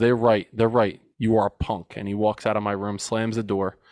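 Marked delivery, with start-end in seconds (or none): 0.0-1.9 mock-disgusted voice. Retelling what father said before walking out, imitate father's disgust. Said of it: "with this like disgust in his eyes".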